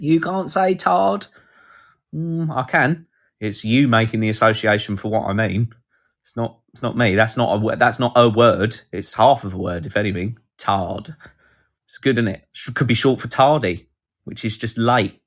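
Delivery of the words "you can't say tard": high, slow, whiny mock complainer, prissy. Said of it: "cancel culture people on your back".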